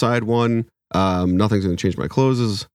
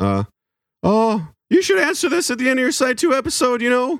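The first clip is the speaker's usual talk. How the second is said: put-on nervous cartoon teen voice, higher pitched. Reading a listener's email aloud when asked: Morty voice. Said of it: "in the Morty voice".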